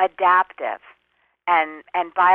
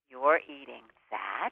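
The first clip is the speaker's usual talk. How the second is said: very quiet, low, hushed scolding and shaming voice; 6 semitones lower, 12 dB quieter than usual. Giving an example of the inner voice that shames you, shaming inner voice. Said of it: "I'll give you an example of the voice".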